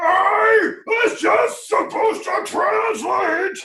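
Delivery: shrill, furious monster voice, stretching out "I". Narrating a fight to the players, the game master voices a furious creature. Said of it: "the creature's like ... just furious".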